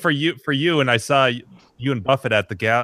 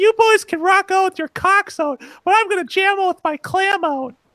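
put-on drunken voice, very high-pitched and loud; 4 dB louder than usual. Retelling a line shouted on a bus: imitating a loud drunk girl. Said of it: "some girl really drunk and loud".

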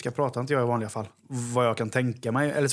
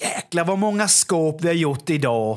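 Småland dialect laid on thick; 5 semitones higher, 5 dB louder than usual. Showing how people exaggerate Småland speech: exaggerated Småland dialect. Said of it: "Så överdriver man småländskan så här då va?".

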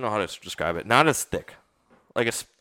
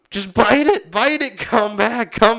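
acted scream, much higher; 12 semitones higher, 7 dB louder than usual. Retelling a fishing story, reenacting yelling at a fish, retelling a scream. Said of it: "I immediately start like screaming".

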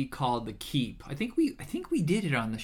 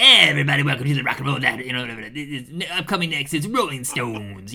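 nonstop 1950s dj patter, louder; 7 dB louder than usual. Podcast host joking about own talking, imitate an old-school 1950s radio DJ. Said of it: "like one of those old school DJs".

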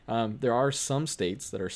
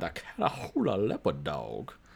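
mock Cajun accent, much lower; 5 semitones lower than usual. Talking about dog breeds, saying a breed's name in a put-on Cajun accent. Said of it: "you can only say its name in that accent".

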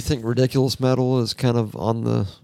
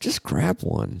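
casual, unbothered, nonchalant, offhand delivery; 3 semitones lower, 4 dB quieter than usual. Showing how Russell should say the line, the speaker does a nonchalant Russell impression. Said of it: "here's my impression of when Russell says".

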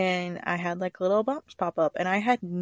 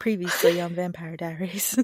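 show-recap announcer voice. Redoing a TV show's intro line correctly: Vampire Diaries recap voice. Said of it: "I did it wrong".

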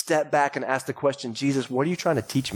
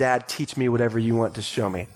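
put-on sweet, angelic child voice, lower pitch; 3 semitones lower than usual. A dad retelling his son's timeout, imitating a sweet angelic child. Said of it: "like a perfect angel child saying".

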